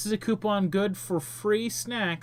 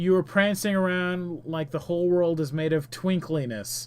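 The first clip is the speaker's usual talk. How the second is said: ordinary talk, nothing marked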